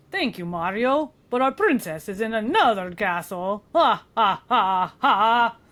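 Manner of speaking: put-on vampire voice with a Swedish accent. Reading game lines in character: Swedish vampire voice. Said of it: "That's the Swedish vampire".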